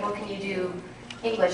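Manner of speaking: plain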